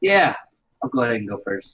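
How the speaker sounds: sounds annoyed, angry and pissed off. Asked who goes first, agree to answer first, sounding pissed off. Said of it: "you sound pissed off".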